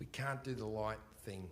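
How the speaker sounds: very quiet, low, conspiratorial stage whisper. Retelling how he and Andrew half-whispered to the hooker so Dan wouldn't hear. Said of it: "we're whispering because we don't want Dan to hear".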